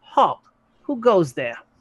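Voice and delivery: tiny gnome voice acting big and important. Voicing a gnome guard challenging people who come in, puffed-up gnome guard voice. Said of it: "puffs out its chest and says".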